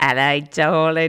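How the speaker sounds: poor put-on East London accent. Introducing Cockney rhyming slang to the audience: worst East London accent. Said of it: "probably the worst East London accent you've ever heard".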